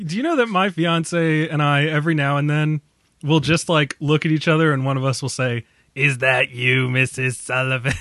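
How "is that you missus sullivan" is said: mocking Boston accent like an old Brooklyn woman. Speaker shows how they tease the listener's accent, mocking Boston accent.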